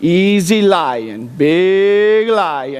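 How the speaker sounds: very slow, low, unbothered dead calm, words stretched. Retelling a man with a shepherd's staff facing a lion, imitating a ridiculously calm monotone. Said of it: "so monotone and just ridiculously calm".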